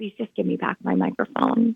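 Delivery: put-on, very sweet, very low voice. Retelling asking a woman to give back the microphone, in the sweetest, lowest voice. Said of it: "sweetest, lowest voice I could muster".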